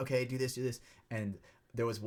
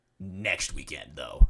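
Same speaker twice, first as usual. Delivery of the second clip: very low, very loud, booming demon voice; 8 semitones lower, 8 dB louder than usual. Retelling how she answered him, in a put-on demon voice. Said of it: "with a demon voice".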